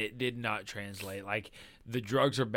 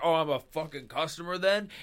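imitated nasty, snide tone, higher pitch; 6 semitones higher than usual. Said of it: "he gets real shitty".

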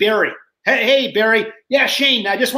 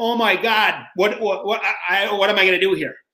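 put-on panicked voice. Retelling not being ready for who won: retelling own panicked thoughts. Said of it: "I remember being panicked".

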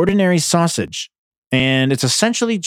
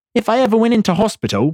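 clumsy, bad put-on British accent, pitched up; 9 semitones higher than usual. Ranting at someone who works in healthcare, the speaker tries British wording: bad British accent. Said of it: "that was not a good British accent".

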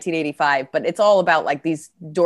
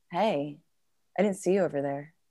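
very soft, hushed, docile voice; 10 dB quieter than usual. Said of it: "just kind of docile".

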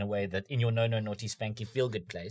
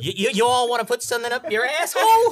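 put-on Texan accent, much higher, louder; 14 semitones higher, 11 dB louder than usual. Comedy bit, switching from a British voice to a put-on Texan accent. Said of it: "Texan would have been".

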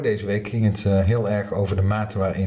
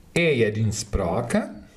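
mock Swedish accent; 2 semitones higher than usual. Speaker says the title of a Frisian poem in a Swedish accent. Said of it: "Ik geef nou een Zweeds accent aan".

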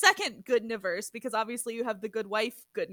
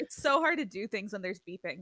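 normal talking voice

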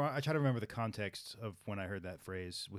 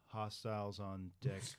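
slow, deliberate, each word drawn out with care; 4 dB quieter than usual. Asked to say the yelled phrase again slowly, the speaker repeats it slowly. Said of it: "Say it again slowly".

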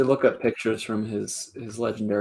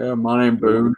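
put-on deep Southern accent; 6 dB louder than usual. Joking about a player named Boone, imitating someone from the Deep South, deep Southern accent. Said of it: "someone from the deepest of the deep south going".

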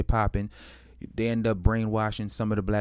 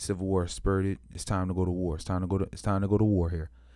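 ordinary talk

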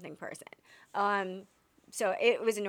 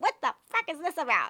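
put-on griping, cranky old man voice; 7 semitones higher than usual. Imitating the old man who complains at the end of Sixty Minutes: Andy Rooney voice. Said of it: "all he does is complain at the end".

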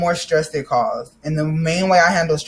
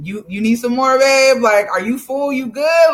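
amused, light put-on voice; 7 semitones higher than usual. Retelling a girlfriend watching the speaker eat, imitating her smirking. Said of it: "with a smirk and a smile on their face".

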